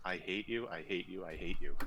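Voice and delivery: ordinary talk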